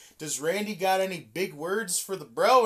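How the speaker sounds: ordinary delivery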